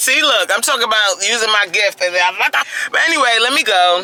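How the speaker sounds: loud, high-pitched hollering. A speaker getting ready to leave for home, yelling. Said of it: "I'm sorry I'm yelling".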